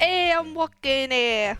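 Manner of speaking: New York gangster accent. Defending the accent to a co-speaker who calls it offensive, New York gangster accent. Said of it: "But that's the accent!".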